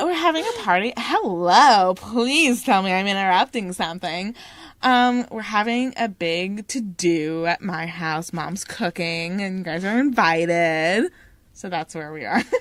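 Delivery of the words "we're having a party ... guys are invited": put-on ditzy, airhead valley girl chattering voice. Reading a character's invitation to a party aloud: valley girl voice. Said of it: "Valley girl?".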